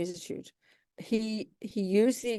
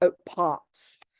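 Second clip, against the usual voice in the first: put-on English accent. Showing how the English say the word: English accent. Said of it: "English say".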